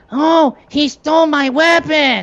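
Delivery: annoying squeal, very high, slow, drawn out. Retelling a cartoon scene where a character touches his arm: annoying Cutman voice. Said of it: "he literally goes".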